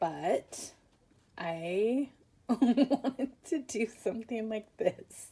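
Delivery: giggling and laughing through words. Showing a new explosion-style cover, laughing while talking. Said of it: "I can't stop laughing".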